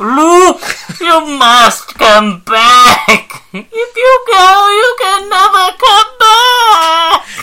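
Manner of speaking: very high, slow, stretched-out ghostly call.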